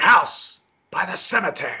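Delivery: slow movie-trailer narrator voice. Quoting a movie trailer, imitating its narrator: Brother Theodore trailer voice. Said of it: "The one that's voiced by Brother Theodore".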